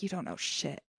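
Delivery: barely audible, very quiet, breathy, hushed whisper. A voice heard from the other side of the door, very quiet. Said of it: "very quietly".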